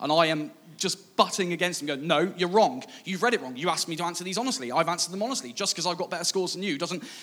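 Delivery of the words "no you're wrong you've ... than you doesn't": put-on mouthy, leery teenage voice, rattled off quickly. Speaker relives arguing, at fourteen, that a man misread his answers, retelling leery arguing back. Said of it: "14-year-old [name] is getting absolutely leery".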